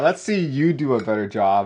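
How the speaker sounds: ordinary talk, nothing marked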